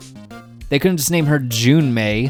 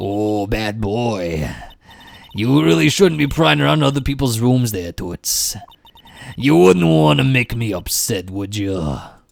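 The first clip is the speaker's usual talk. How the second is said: strained put-on voice, slower. Game player voicing a character who catches someone prying in a room: strained character voice. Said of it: "The voice actually hurts my throat".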